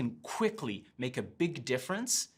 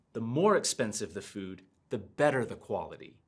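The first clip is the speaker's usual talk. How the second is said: "more" stressed, tune falls afterward; 4 semitones lower than usual. Showing intonation that is not kept straight: stress more, then falling intonation. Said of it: "notice how I stress the word and then my intonation falls".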